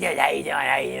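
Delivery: put-on hard-to-understand speech. Describing a funny comedian, imitating Bobby Slayton's talk. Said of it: "He talks like".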